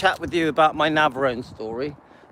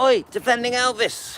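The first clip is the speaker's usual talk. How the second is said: mock shout, much higher; 8 semitones higher than usual. Telling how people call out a nickname in the hometown, retelling a shouted call. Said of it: "They shout out".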